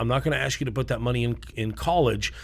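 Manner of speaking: plain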